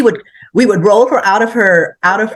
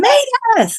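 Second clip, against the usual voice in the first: play-acted very high, shrill scream. Retelling how she started screaming the speaker's name: imitating someone screaming a name. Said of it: "she starts screaming my name".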